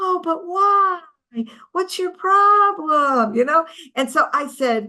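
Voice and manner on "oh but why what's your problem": mock slow, baffled, puzzled tone. Speaker retells the protesters he was yelling at, imitating puzzled protesters. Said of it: "they're saying".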